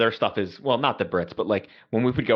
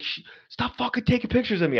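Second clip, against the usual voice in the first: put-on very high, shrill screaming; 13 semitones higher than usual. Retelling how a pilot being photographed was screaming: imitating someone screaming. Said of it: "he's screaming at me".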